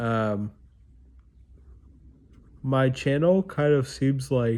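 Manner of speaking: speaking through a yawn. Talking to viewers about their channel, the speaker keeps yawning mid-sentence. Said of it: "sorry, I keep yawning".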